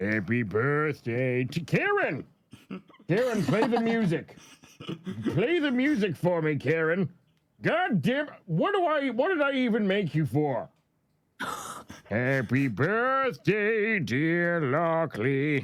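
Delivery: very high-pitched, exaggerated, over-the-top cartoon character voice. Doing a birthday bit for Lockley, the speaker talks to Karen in Plankton voice. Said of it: "the plankton voice requires a little bit of extra".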